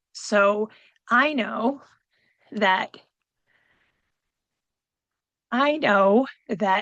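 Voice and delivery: very slow, choked-up voice catching. Talking about missing a late mother at the holidays, choked up with emotion. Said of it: "getting a little choked up".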